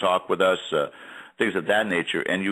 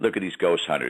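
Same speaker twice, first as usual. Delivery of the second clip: ordinary delivery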